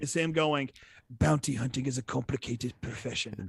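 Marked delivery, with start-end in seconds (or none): 1.2-3.4 movie trailer-style character voice. Quoting the only line of dialogue in a trailer: Herzog impression. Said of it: "Great impression right there".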